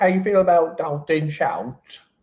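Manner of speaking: put-on British accent. Imagining talking football to his wife: put-on british accent. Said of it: "talking about football in that voice".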